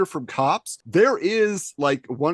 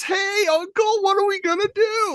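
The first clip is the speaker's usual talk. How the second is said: very high, whining sidekick voice. Describing a cartoon villain who talks like a whiny idiot: imitating Berserko's voice. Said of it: "he kinda talks like this".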